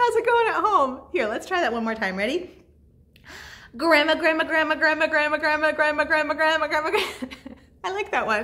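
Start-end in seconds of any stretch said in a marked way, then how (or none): 3.8-7.0 rattled off at top speed, rapid-fire. Leading listeners at home in a clapping rhyme game, saying grandma very fast. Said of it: "Let's say grandma as fast as we can".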